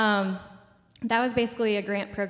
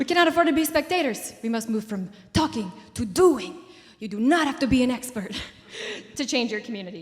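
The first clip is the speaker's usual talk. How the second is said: put-on Colombian accent; 3 semitones higher, 3 dB louder than usual. Quoting a speaker from Colombia, imitating his Colombian accent. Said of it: "it's really hard to not say it in his accent".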